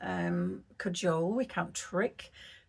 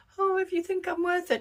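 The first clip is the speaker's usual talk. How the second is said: very high, loud, pleading, begging tone; 12 semitones higher, 5 dB louder than usual. Showing how not to ask the universe for something, mock pleading. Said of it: "There was no pleading".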